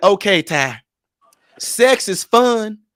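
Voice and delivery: very slow put-on Southern country accent. Quoting the speech therapist talking to ty, country accent. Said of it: "she country like you".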